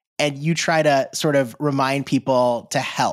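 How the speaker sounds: plain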